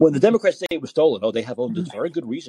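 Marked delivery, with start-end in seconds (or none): none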